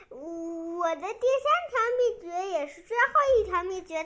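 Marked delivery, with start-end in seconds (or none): none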